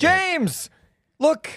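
very high, shrill shouted yell. In a scene, calling out to someone walking in, yelling. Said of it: "You don't have to yell".

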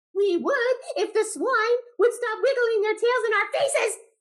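very high, bleating, baaing sheep voice. Reading a story aloud and doing the animal voices: bleating sheep voice. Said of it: "baaed the sheep".

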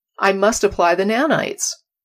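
ordinary talk, nothing marked

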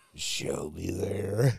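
super creepy put-on voice. Retelling someone asking for Shelby, in a super creepy voice. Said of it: "did he do the super creepy voice?".

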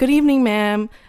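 mock super polite, too-nice voice, high and loud. Retelling the worker's greeting at the window: imitating a super polite worker. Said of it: "he was so polite".

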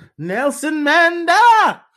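shrill, loud, high, belted comic yell. Quoting a line from Rush Hour: Chris Tucker impression. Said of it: "That was a pretty good Chris Rock".

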